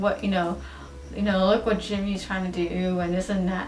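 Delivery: ordinary talk, nothing marked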